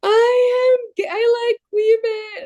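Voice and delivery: very high, very slow tearful sobbing. Retelling coming out to a sister while driving: retelling own past sobbing. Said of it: "And I started to, like, sob".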